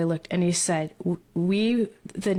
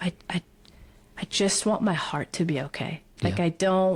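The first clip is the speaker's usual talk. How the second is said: re-enacted crying, tearful voice. Retelling words said to a husband while in tears: reenacting past crying words. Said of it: "I just remember crying and saying to him".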